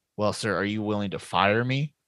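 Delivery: imitated whisper. Retelling the whispered reply in the same film scene: imitating a whisper. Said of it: "whispered tones again".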